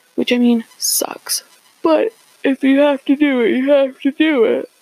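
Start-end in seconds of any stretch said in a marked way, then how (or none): 1.9-4.7 speaking through yawns, higher and slower. Discussing the news during the coronavirus: yawning while talking. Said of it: "I'm yawning so much".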